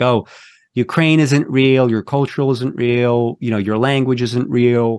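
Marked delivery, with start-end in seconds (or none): none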